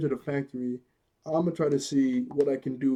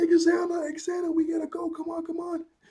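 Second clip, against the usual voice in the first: play-acted frantic shouting, very high-pitched. Recounting a scene where Xana attacks, imitating Jeremy yelling frantically. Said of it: "Jeremy starts to yell like crazy".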